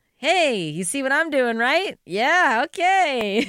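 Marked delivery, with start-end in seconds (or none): 0.2-2.0 high, sweet, lovely, friendly Midwestern accent. Speaker showing how she pushes boundaries with people, lovely Midwestern accent. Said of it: "with such a lovely Midwestern of".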